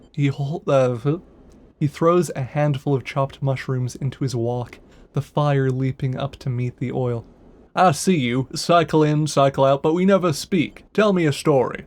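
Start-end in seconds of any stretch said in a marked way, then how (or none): 7.8-11.7 big, booming, resonant, echoing voice. Narrator reading a story, voicing a figure addressing the listener, in a booming voice. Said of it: "a booming voice that echoes through the corridor".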